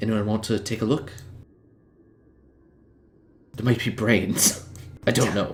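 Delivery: whispering. Whispering a warning to the rest of the party: whisper. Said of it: "I'm gonna whisper to the rest of the party".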